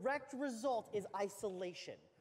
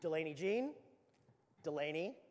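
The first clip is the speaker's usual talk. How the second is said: low, firm, stern parental dad voice; 5 semitones lower than usual. A parent showing how they speak to their misbehaving three-year-old, in dad voice. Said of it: "use my dad voice".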